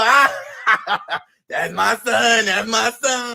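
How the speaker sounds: very slow, drawn-out, laughter-filled delivery. Retelling what she said at their first meeting: imitating her laughing. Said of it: "She laughing like the shit is funny".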